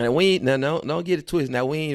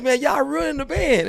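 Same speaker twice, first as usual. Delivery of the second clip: mock crying voice, higher pitch; 12 semitones higher, 4 dB louder than usual. Retelling how a guy complained and cried when called out by name for ruining things; imitating someone crying. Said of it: "Tyree start crying like".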